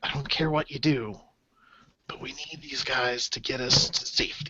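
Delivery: very quiet, hushed whispered aside. Speaking as a character addressing another character, whispering. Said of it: "he whispers to you".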